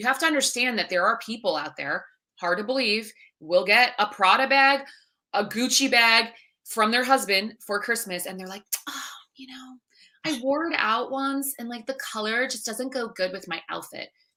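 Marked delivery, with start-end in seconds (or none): 8.9-14.1 soft, spoiled rich-person voice. Describing people who get designer bags as gifts, the speaker voices one: rich-person voice. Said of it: "I'm using that voice".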